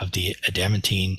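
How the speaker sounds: normal talking voice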